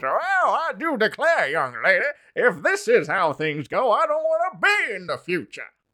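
high, swooping character voice with wide pitch swings. Quoting a show's Mark Twain character: imitating Mark Twain's way of talking. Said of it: "that's exactly how he talks".

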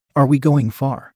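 usual speaking voice

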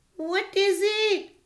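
high, frightened, scared cry. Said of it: "she cried".

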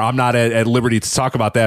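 usual speaking voice

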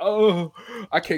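acted crying, high and tearful, throbbing pain. Recounting a painful finger injury, quoting their past self on the bed; retelling crying in pain. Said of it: "I'm crying".

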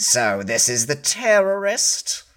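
pompous, haughty tone. Voicing a company CEO questioning a captured suspect: pompous. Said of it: "with a very pompous expression, he says".

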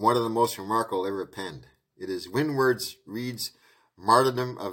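ordinary delivery

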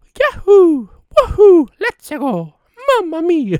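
very high, loud, belted-out put-on character voice.

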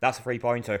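put-on deadpan, flat delivery. Recounting someone's reaction when a bouquet got kicked, retelling a deadpan remark. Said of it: "deadpan as you like".

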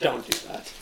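whispered, very soft and hushed. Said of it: "he said".

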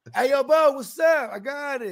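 mock very high, drawn-out holler. Imitating a friend who yells at you in public: imitating a friend yelling in public. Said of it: "the homie that yells at you in public".

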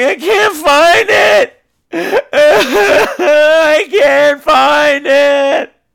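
very slow, high, tearful sobbing. Retelling a girl in a doorway digging and crying: imitating someone crying. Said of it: "digging and crying, going".

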